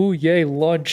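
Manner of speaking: dim, oblivious, clueless voice. Retelling an anime scene, imitating the kidnapped main character. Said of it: "She was just kinda like".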